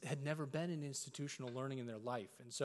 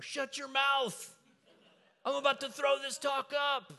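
furious shout, very loud, very high, shrill; 12 semitones higher, 9 dB louder than usual. Retelling how listeners yell when displeased: imitating an angry yell. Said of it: "they'll yell from anywhere".

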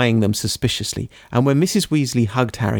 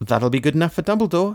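cheerful, pleased, happy, lifted tone; 6 semitones higher than usual. A character remarks on a signed letter from his godfather, happily. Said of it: "said Harry happily".

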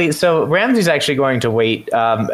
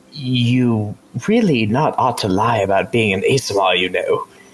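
low voice with the word "you" drawn out; 4 semitones lower than usual. Voicing his character, a player addresses Emni while leading horses back to camp: low voice. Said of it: "in a low voice".

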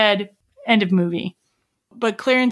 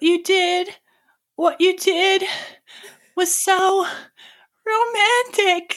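mock-tearful put-on crying voice, much higher; 12 semitones higher than usual. Retelling a movie scene where a woman answers a man, imitating someone crying. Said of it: "she says it through tears".

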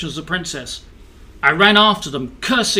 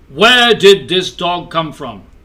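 loud, booming king's voice; 6 dB louder than usual. The narrator voices the king calling to the kennel master, in a booming voice. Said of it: "the king's voice boomed".

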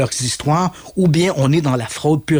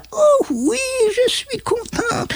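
put-on very high, slow elderly woman's voice. Retelling how a channeler speaks while channeling an old lady, old lady voice. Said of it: "elle parle avec une voix de vieille madame".

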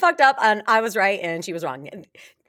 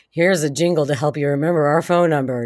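very low, deep, dead-flat monotone ad voice; 7 semitones lower than usual. Recalling an old commercial's announcer, monotone commercial voice. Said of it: "the guy with the really monotone voice".

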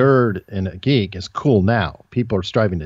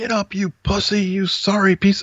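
put-on shrill screaming, very high; 11 semitones higher than usual. Retelling how a coach screamed at a fallen player: imitating a coach screaming. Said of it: "he's screaming at me".

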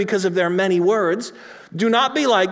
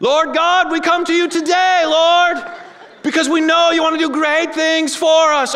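loud, hollered, yelling church-prayer delivery; 8 semitones higher, 4 dB louder than usual. Speaker parodies people who pray loudly, parodying a loud yelled prayer. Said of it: "why are you yelling?".

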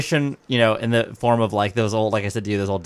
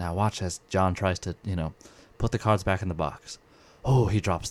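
quieter British nature documentary narrator voice; 3 semitones lower, 7 dB quieter than usual. Showing how a narrator might talk over the act: David Attenborough-esque British narration. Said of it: "David Attenborough-esque thing. ... with his British accent".

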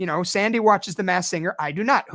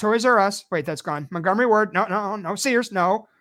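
ordinary delivery

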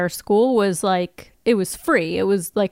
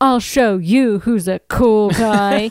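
put-on drunk slurring voice, louder; 4 dB louder than usual. Retelling a scene from the episode: drunk Spike impression. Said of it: "you're doing a spot on drunky Spiky".

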